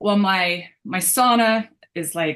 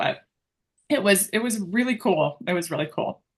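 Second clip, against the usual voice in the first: moved, touched, heartfelt emotional tone; 4 dB quieter than usual. Recalling an unexpected moment that was wonderful, a little emotional. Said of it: "see, I get a little emotional".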